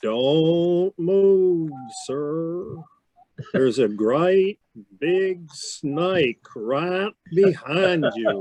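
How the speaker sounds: put-on slow, strong, pronounced drawling Texan accent. Retelling a man's warning as he stood near you amid fire and smoke, in Mac's slow, pronounced Texas drawl. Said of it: "his Texas drawl was so pronounced, so slow".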